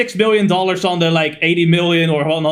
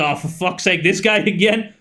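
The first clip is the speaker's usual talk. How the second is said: ordinary talk, nothing marked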